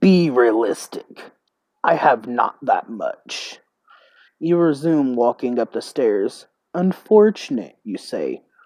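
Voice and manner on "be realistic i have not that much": growling demon voice. Narrator voicing a demon who bargains with you, demon growling. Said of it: "The demon growls".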